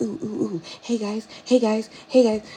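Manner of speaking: over-excited, super hyper little dog voice, yapping. Describing a friend's Chihuahua, imitating a hyper Chihuahua. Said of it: "she's like super hyper".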